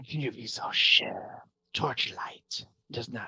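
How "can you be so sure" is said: hissing lizard-folk voice, quieter. Retelling a game scene where the lizard folks cut in: hissing lizard-folk voice. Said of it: "the lizard folks hiss out like".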